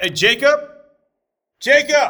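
very high, loud, carrying yell. Cutting off a discussion, speaker calls out for jacob, yelling. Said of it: "you don't have to yell".

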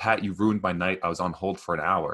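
ordinary delivery

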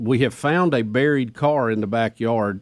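plain

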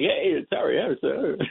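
goofy, try-hard radio announcer, high and raspy. Mocking an old radio clip's crazy guy trying to be funny: imitating Harry Harrison. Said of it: "this crazy guy trying to be funny".

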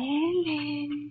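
eerie, ghostly, spooky voice. Urged by a partner to call ellen from the foot of the stairs: spooky voice. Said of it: "in a spooky voice".

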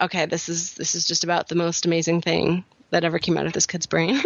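ordinary talk

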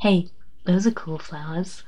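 very soft, hushed, creepy murmur. Re-enacting a scene staring at Kimberly, in a put-on creepy quiet voice. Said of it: "talk quietly and very creepily".

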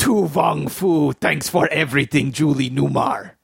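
put-on Russian accent. Asked to give it a try, saying a title, Harrison Ford Russian accent. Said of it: "in my Harrison Ford Russian accent".

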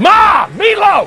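put-on yell with heavy growl. Showing how the yell at Mom should sound, imitating a growling yell. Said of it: "But a little more growl".

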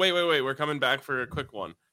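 usual speaking voice

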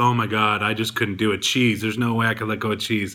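ordinary talk, nothing marked

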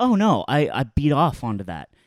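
ordinary talk

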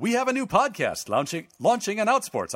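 mock broadcast announcer voice. Promoting a new podcast on the network: put-on announcer voice. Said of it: "Bear with me as I put in my announcer voice for this one".

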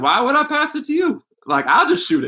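very high, swooping, animated drawl. Answering how Allen Iverson actually said it: Allen Iverson impression. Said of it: "you got a pretty good A I impersonation".

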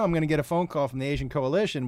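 plain

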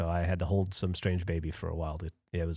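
down, dejected, low, soft sad voice. Just talking to listeners, sounding sad. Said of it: "You sound sad just talking".

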